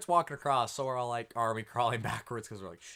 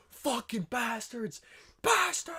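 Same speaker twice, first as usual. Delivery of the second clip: put-on, shrill, very high lung-busting scream; 12 semitones higher than usual. Retelling how a man with a shotgun yelled in the street: imitating a man screaming. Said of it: "Fucking just screaming his lungs off".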